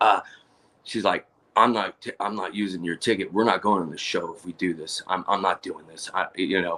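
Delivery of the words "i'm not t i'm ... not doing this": hushed, close-up half-whisper, right at the ear. Retelling what his girl half-whispered in his ear: imitating her half-whisper. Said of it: "she comes in my ear and, like, whispers".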